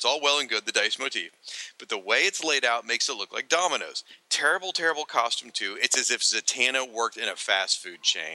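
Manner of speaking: usual speaking voice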